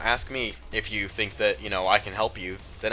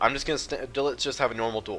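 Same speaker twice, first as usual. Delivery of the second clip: ordinary talk, nothing marked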